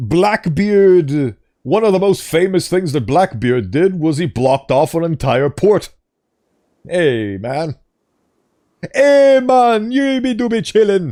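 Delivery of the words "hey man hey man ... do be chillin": slow, stretched-out, high put-on Jamaican accent. Breaking off a pirate fact to do a put-on jamaican accent. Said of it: "I absolutely love that accent".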